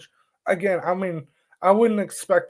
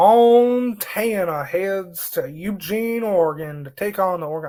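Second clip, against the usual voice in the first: slow southern drawl, Montana drawn out. Speaker reads out college football matchups, slipping into a southern accent. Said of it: "I don't know why I'm like doing a southern accent there".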